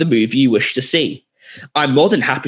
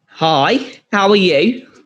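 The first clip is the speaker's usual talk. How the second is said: terrible put-on Australian accent, pitched up; 5 semitones higher than usual. Playing a worker greeting a customer in a scene, in a bad Australian accent. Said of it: "The Australian accent in this".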